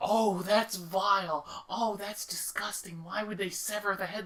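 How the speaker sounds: put-on very high, appalled, disgusted elderly voice. Speaker describes grandparents reacting to Mortal Kombat X, imitating disgusted grandparents. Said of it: "the majority of the grandparents were going like".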